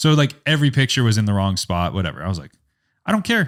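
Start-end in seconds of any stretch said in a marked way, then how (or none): 3.1-3.5 high-pitched, thrilled, excited blurt. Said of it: "so excited".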